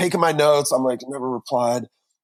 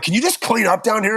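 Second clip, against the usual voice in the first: grumpy, irritable, ornery tone, pitched up; 6 semitones higher than usual. Retelling what a wife asked on the way out: imitating an ornery tone. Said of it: "in a really kinda ornery, um, tone".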